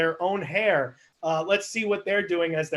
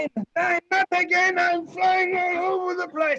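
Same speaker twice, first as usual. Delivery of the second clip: put-on very high scream in a Russian accent; 12 semitones higher, 3 dB louder than usual. Storyteller voices the Russian bowling ball thrown into the air: Tim the Russian bowling ball screaming. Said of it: "it's going to be a Russian bowling ball. So Tim the Russian bowling ball is thrown into the air, and he screams out".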